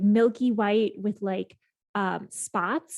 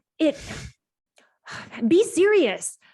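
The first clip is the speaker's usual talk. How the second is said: high, loud, slow, upset, exasperated voice. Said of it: "He's so upset. He's like".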